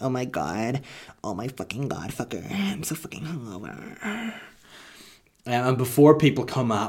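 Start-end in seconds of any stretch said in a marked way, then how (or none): 0.0-4.3 showy, swooping put-on reality-star celebrity voice. Acting out being hungover while recording a podcast, in Kardashian voice. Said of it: "That's my Kardashian voice".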